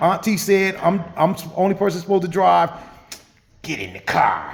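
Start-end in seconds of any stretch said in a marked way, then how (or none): 3.6-4.5 put-on very low, deep New York accent. Speaker retells a cousin who jumped behind the wheel; Jonathan's New York accent. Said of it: "With that New York accent".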